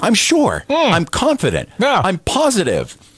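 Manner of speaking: dripping sarcasm, very high, swooping pitch. Commenting on how state paperwork gets reviewed, sarcastic. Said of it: "I'm being sarcastic".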